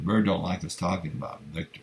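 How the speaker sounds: plain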